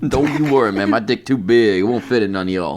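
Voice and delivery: put-on Cajun accent, Louisiana style. A speaker riffs as an imagined prisoner reassuring other inmates, in a Cajun accent. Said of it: "I don't know why you're doing that accent".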